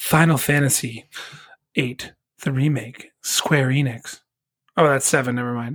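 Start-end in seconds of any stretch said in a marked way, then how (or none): 0.0-4.2 awards-ceremony presenter, award show announcer voice. Reading out a game nominee and its publisher, in an award show voice. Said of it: "I'm going to do my my award show voice".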